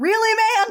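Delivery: play-acted, very high, hysterical laughing. Retelling Lestat showing up right after the bite: imitating Lestat laughing hysterically.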